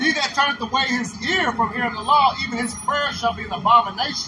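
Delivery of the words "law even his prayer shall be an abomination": ordinary talk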